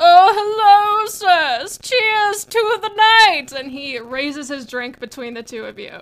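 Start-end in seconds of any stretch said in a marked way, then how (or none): 0.0-3.5 put-on very high, very loud, very slow drunken drawl. Voicing a gnome prince greeting two people at a party: drunk gnome prince voice. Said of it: "He's blazing drunk".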